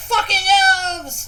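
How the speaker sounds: very high, very loud, shrill, furious goblin voice. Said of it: "Balar, he's like".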